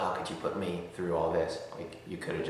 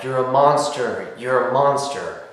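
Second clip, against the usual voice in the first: very loud, high, tearful sobbing scream; 7 semitones higher, 11 dB louder than usual. Retelling a parents' kitchen fight: imitating the mom sobbing and screaming. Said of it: "sobbing and screaming back".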